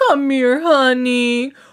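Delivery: sweet, affectionate coo like a cuddly bear. Retelling a hug and what was said during it: imitating Jane McPherson cooing. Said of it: "like little cuddly bears".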